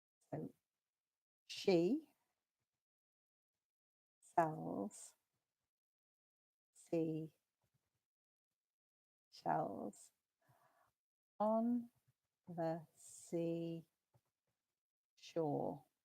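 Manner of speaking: very slow, halting, careful word-by-word delivery. Demonstrating a tongue twister for listeners to repeat after, very slowly. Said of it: "I'm going to say it very slowly".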